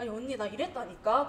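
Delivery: ordinary delivery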